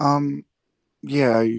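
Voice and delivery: stammering a little, halting start. Called on to ask a question in front of many people, stuttering. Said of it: "sorry to stutter a little bit".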